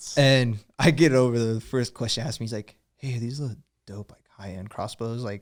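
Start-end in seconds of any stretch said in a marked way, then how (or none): 3.0-5.2 whispered voice. Retelling the first question someone asked: imitating a whisper. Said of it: "kinda whispers".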